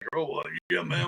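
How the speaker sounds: put-on elderly old man voice. Explaining you just change your voice, showing an example: put-on old man voice. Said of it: "say I'm going to be an old man. Like".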